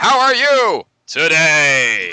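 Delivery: very loud, high, booming, very slow announcer, "today" stretched. Retelling a phone call from a buddy: movie phone guy voice. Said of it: "he actually really talks like that too".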